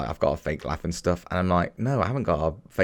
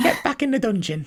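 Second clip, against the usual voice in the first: motherly voice, very high. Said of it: "Spot on voice".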